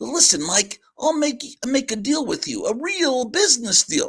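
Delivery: cartoon cat voice. Reading a comic aloud, voicing the cat making a deal: cat character voice. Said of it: "do the voice of the cat and the mouse".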